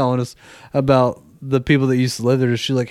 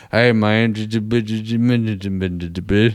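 very slow, drawn-out, stoned stutter stuck on j-; 3 semitones lower than usual. Imitating the old neighbor's speech: Boomhauer voice after smoking a blunt. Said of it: "Boonhauer after he smoked a blunt".

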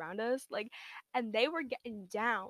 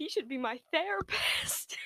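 very loud, drawn-out, pitched-up, mocking delivery; 5 semitones higher, 4 dB louder than usual. Speaker retells what a woman said from behind, imitating someone saying it loudly. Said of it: "like she said this very loudly".

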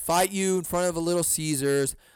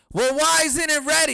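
shrill, high, loud shrieking scream; 11 semitones higher, 6 dB louder than usual. Retelling a customer screaming at the counter lady about his pizza: imitating a man screaming. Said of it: "And he just keeps on screaming".

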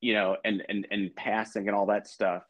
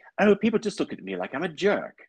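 put-on posh British accent; 8 semitones higher than usual. Retelling what a swimming guide said: imitating a BBC British accent. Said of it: "fabulous sort of B B C British accent".

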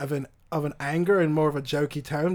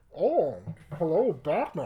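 lilting, swooping, sing-song put-on voice with wide pitch swings. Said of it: "I can do a Bane".

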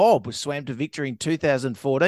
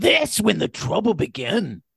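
clumsy, bad, put-on Northern English accent; 2 semitones higher than usual. Podcast co-host repeats a line the way they say it up North, bad Northern English accent. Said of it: "That's a really bad accent".

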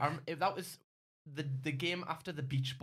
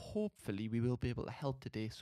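speaking very softly; 3 semitones lower than usual. Podcast host talking into listeners' ears on the audio version, talking very softly. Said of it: "I'm talking very softly".

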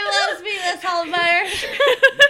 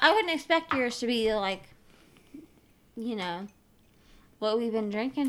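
talking with mouth full, chewing through words; 8 semitones lower, 11 dB quieter than usual. Chatting with others about beer into the microphone, eating while talking. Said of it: "why are you eating and talking to the microphone".

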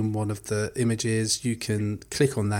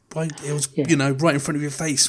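mock screaming, higher; 5 semitones higher than usual. Imagining someone pointing out hidden game meanings he missed: imitating someone screaming. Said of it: "someone's screaming at me going".

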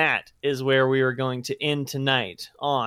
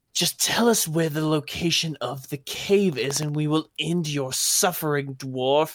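demanding, interrogating voice; 2 semitones higher than usual. Voicing a captor demanding a cave's location from a dwarf: voicing a captor interrogating a dwarf. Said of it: "You hear, you hear a".

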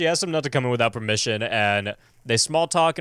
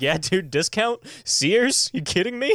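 high, mock boastful, proud show-off bragging; 8 semitones higher than usual. Retelling a character answering a woman's question, imitating proud bragging. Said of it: "he's so proud of it".

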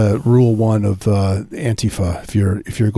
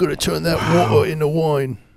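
put-on heavy British accent laid on thick, pitched up; 7 semitones higher than usual. Imagining Jesus suddenly talking with a heavy British accent: Jesus with heavy British accent. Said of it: "The way he says water".

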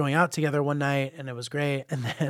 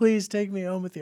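imitated sobbing, begging voice, pitched higher; 6 semitones higher than usual. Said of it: "turns around to me sobbing".

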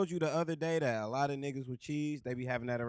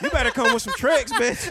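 shouting, higher and louder; 10 semitones higher, 9 dB louder than usual. Arguing loudly with the others about paying women, yelling. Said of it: "we all yelling".

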